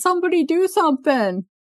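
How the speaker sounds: mock yelling, high-pitched. Retelling a scene, imitating Teddy yelling.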